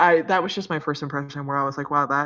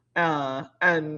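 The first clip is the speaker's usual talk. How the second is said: ordinary talk, nothing marked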